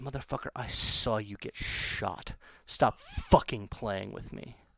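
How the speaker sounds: low, hushed, breathy near-whisper. Recounting what another player said, a speaker quotes him in a low voice. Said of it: "he says in a, in a in a low voice".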